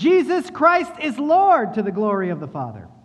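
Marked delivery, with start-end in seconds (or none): 0.0-1.7 jubilant, high, loud, joyful cry. Speaking of those saved by faith, acting out their joyful shout. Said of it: "they will shout it joyfully".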